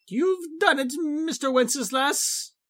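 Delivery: very high squeal with voice cracking and breaking. Catan greets Mr. Wenceslas on his return, squealing, voice cracking. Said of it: "Catan squealed, his voice cracking".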